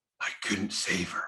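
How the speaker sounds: mocking overdone stage whisper, soft, breathy, loud. Mocking actors in tv shows who whisper their lines: mocking loud whisper acting. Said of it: "they're whispering really loud".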